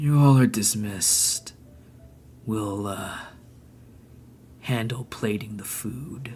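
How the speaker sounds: eerie, sleepy, drowsy voice, hardly their own. The man holding the dog addresses the group, eerily sleepy voice. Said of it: "in like this sort of like eerily sleepy".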